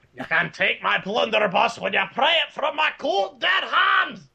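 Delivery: high, hollered, shouted fantasy dwarf voice. Showing off voices while discussing Army of Darkness: Warcraft 3 dwarf voice. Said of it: "in the dwarven voice from Warcraft 3".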